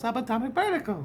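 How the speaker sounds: cheerful, nice, very high, happy female voice. Retelling a female voice heard during a vision: imitating a happy, nice female voice. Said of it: "All happy and nice".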